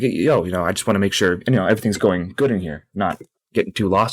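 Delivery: ordinary talk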